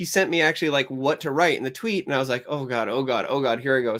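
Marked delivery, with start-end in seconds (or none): 2.5-4.0 put-on jittery, nervous, panicking voice. Retelling being pushed to post a tweet, imitating own nervous panic. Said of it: "So nervous".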